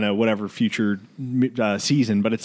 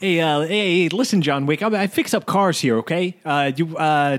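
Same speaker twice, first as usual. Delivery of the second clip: pushed higher voice, fumbling through the words; 5 semitones higher than usual. Asked on the spot to do an impression: John Leguizamo impression. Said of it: "your best John Leguizamo impression".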